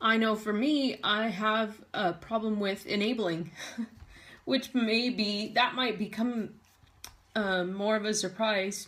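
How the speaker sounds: voice of someone holding back tears, trying not to cry. Speaker admits their own problem with enabling someone, holding back tears. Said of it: "I hate the way I sound when I'm trying not to cry and talking".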